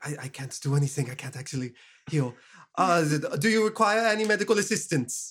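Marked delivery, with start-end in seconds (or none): 0.0-2.3 muttering quietly under the breath, faster. Crouched beside a companion, the player's character speaks under the breath. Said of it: "kind of under my breath".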